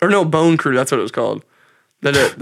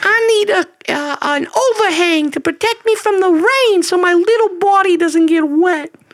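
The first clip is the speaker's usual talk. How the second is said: put-on comically high voice, pitched even higher. Acting out Frankie walking in, high-pitched Frankie voice. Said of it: "Frankie's voice is just comedically high pitched".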